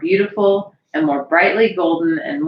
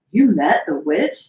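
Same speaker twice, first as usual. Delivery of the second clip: low, threatening, menacing growl. Narrator reading Aslan's question to Diggory, in a low, growling voice. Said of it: "Said Aslan in a low voice, which had the threat of a growl in it".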